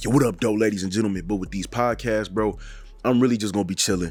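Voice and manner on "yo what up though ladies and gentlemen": upbeat, lively, fully engaged radio announcer voice. Speaker sitting up behind the mic shows his energetic radio voice. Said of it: "So I put on my little radio voice".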